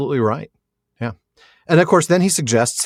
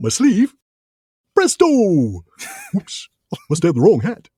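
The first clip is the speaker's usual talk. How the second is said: goofy, silly, swooping cartoon moose voice; 4 semitones higher than usual. Joking about a magician's rabbit-from-a-hat act, doing Bullwinkle's voice. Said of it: "I'm hearing Bullwinkle in my head".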